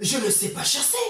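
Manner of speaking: ordinary delivery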